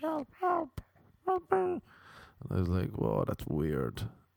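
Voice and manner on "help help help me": put-on very high young boy voice. Retelling a man doing ventriloquism with the boy now in front, ventriloquist's boy voice. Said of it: "now the boy was in the front".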